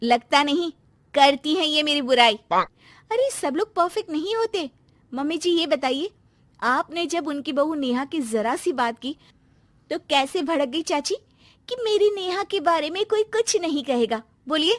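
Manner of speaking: slightly hurt, aggrieved, resentful tone. A daughter-in-law answers her mother-in-law, a little hurt. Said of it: "[name] को सास की बात थोड़ी बुरी लगती है, / [name] को सास की बात थोड़ी बुरी लगती है".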